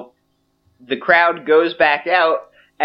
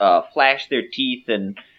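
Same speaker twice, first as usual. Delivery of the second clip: normal talking voice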